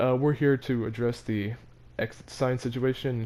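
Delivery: ordinary delivery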